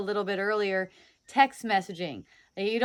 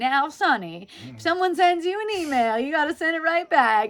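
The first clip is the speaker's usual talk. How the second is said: put-on high-pitched little old lady voice; 6 semitones higher, 3 dB louder than usual. Describing social conditioning, imitating an old lady voice. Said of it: "sounds like an old lady or something saying".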